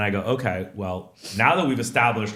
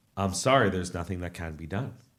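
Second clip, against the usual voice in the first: imitated very calm voice, lower and quieter; 4 semitones lower, 6 dB quieter than usual. Retelling what the hotel clerk said: imitating a very calm clerk. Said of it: "Very calmly".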